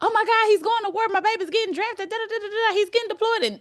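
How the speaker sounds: put-on very high, shrill, rushed, frantic worried-parent voice. Imitating people fretting that a son is being drafted: imitating a panicking parent. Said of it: "people will sit up there and be like".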